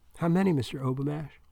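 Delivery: ordinary delivery, nothing marked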